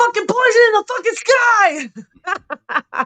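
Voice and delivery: mock very slow, yelled, every word enunciated. Imitating the author yelling his audiobook narration: imitating a yelled reading. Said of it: "You yelled it".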